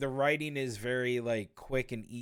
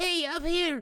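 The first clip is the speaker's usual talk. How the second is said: very high, loud, squeaky cartoon voice; 5 dB louder than usual. Mocking how the Sonic voice sounded in the movie: squeaky Sonic voice. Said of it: "more squeaky Sonic in this one".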